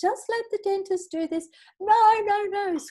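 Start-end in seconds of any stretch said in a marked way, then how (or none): 1.8-2.8 very high, loud wailing, crying scream. Recalling a teenage girl at the dentist, imitating her screaming and crying. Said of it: "screaming and crying and carrying on".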